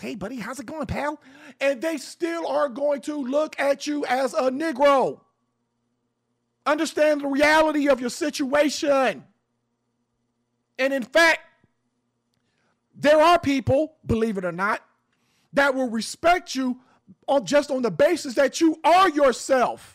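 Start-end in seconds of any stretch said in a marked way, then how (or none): 0.0-1.2 put-on softer, polite, friendly mainstream voice. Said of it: "you can talk like this".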